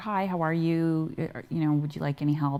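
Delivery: ordinary delivery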